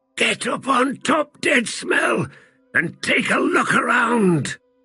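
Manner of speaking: hissing voice, very high pitch. Narrator reading the wounded one's order to Deadsmell, hissing. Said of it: "He heard the wounded one hiss".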